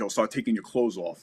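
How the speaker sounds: normal talking voice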